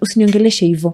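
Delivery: normal talking voice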